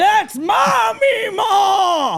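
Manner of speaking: very high, slow, drawn-out shout. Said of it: "she just kept shouting".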